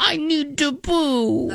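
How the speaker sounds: cute, very high, slow kitty voice. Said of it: "tell me he needs to poo in a kitty voice".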